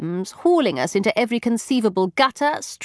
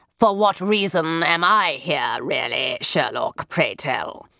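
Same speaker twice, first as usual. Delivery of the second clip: low, grouchy, cranky complaining tone; 6 semitones lower than usual. From the rear of the group, a brother speaks up in a grumpy voice. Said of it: "came a grumpy voice from the rear".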